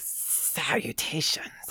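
breathy hiss on every s sound. Speaker repeats a fantasy character's greeting with a Cobra Commander hiss on S. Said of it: "especially with the S sound".

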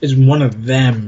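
acted-out scornful, contemptuous, disdainful tone. Describing how a woman spoke of an animal on her family vacation; imitating a contemptuous tone. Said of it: "she almost says it with a tone of contempt".

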